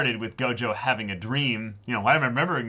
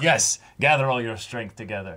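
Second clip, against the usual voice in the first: plain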